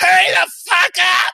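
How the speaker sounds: very high, creaky, rough put-on yell. Podcaster quoting a meme line, yelling in Ernie's voice. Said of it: "It's easier when I yell it in um, Ernie's voice".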